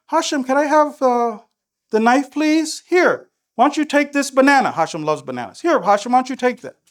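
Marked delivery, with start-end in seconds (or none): 0.1-2.8 mild, gentle, kindly tone. Demonstrating the gentle way of asking someone for the knife: gentle. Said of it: "The gentle one is".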